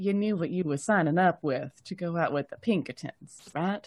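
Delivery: barely audible, hushed, leaning-in murmur. Leaning over to the other person to ask something, said quietly. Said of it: "say quietly".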